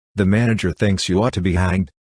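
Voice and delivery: ordinary talk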